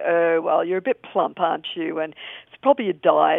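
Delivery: put-on condescending tone. Retelling what a doctor told an ill wife: imitating a condescending doctor. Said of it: "so condescending, the doctor would say".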